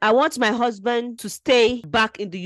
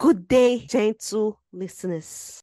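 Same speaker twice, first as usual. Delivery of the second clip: put-on, formal, carefully enunciated read-aloud voice. Starting to read out a letter a woman wrote in, in a put-on reading voice. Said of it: "Let me do my reading voice".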